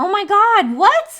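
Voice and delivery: very loud, very high, drawn-out, shocked cry of disbelief. Reacting to a surprising fact just read aloud: surprised yell. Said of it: "Sorry, I did not mean to yell".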